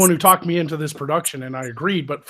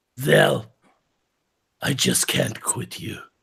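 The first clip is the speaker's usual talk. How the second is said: low, creaky, rough voice; 4 semitones lower than usual. Getting into character to deliver a line to Zell, in Magog's voice. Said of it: "Do you want me to do it in Magog's voice".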